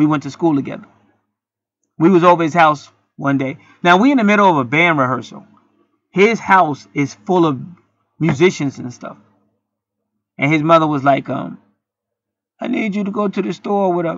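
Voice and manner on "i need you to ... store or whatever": put-on old woman's voice, mocking. Retelling what a schoolmate's mother said during band rehearsal, old lady voice. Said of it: "I'm just doing an old lady voice".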